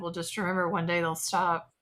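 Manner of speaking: dark, portentous, foreboding put-on tone. Retelling a remark to a young customer after checking her id: retelling an ominous warning. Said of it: "I sort of ominously said".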